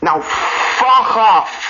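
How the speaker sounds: slow, loud, comic, drawn-out "fuck off".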